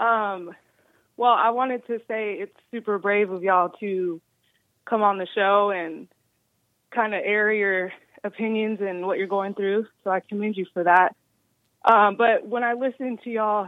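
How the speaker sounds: breathless, winded, out-of-breath talking. Speaking to the guests on the show, out of breath. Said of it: "sorry, I'm out of breath".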